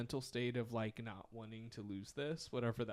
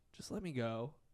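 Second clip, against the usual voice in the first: plain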